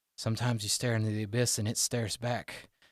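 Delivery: soft, hushed, gone-quiet tone. Voicing a character who turns around on the cart: quiet voice. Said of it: "he gets kinda quiet".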